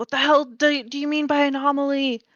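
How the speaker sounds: high-pitched shouted character voice. Playing a character asking what anomaly means: yelling in character. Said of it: "I guess I'll keep yelling".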